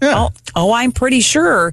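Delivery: snippy, certain tone. Retelling answering him when he asked 'are you sure', with a sure tone. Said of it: "I kind of had like a little tone in my voice".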